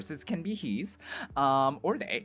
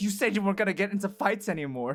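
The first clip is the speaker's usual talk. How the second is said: play-acted tearful crying, reproachful tone; 5 semitones higher than usual. Acting out a nurse who rushes over to him, crying. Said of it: "starts, like, crying and stuff".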